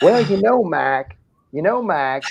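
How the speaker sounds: put-on slow Boston accent. Describing phone chats with Billy DiNapoli, the speaker imitates his opening in a Billy DiNapoli Boston accent. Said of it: "that Boston, Connecticut accent".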